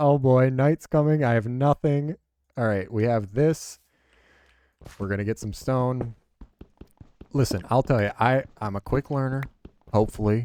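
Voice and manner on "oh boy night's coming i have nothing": high, raised, panicked fretting outburst. Voicing own thoughts as night comes with nothing built: acting out panicked thoughts. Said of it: "panicking 'cause I'm like".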